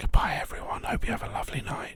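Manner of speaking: odd, weird, soft ASMR-style voice. Signing off the podcast to listeners, saying goodbye in a weird asmr voice. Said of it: "or we could just do a weird A S M R".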